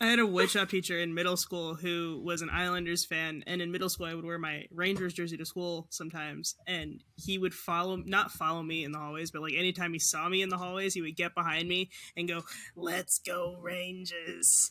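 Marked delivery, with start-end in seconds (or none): 12.7-14.7 put-on Long Island accent, laid on thick. Recalling a middle-school woodshop teacher who followed them in hallways: thick Long Island accent. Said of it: "he had a really thick Long Island accent".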